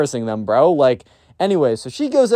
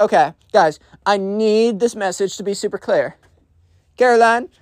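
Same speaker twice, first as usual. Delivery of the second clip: put-on high spoiled-kid voice, like an announcer; 5 semitones higher than usual. Retelling a school story, imitating a spoiled kid on a microphone. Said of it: "So he's like".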